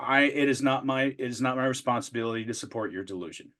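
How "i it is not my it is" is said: plain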